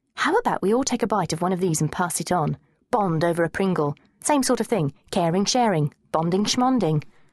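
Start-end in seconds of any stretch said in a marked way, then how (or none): none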